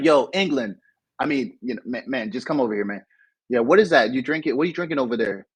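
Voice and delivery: normal talking voice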